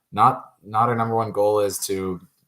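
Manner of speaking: ordinary talk, nothing marked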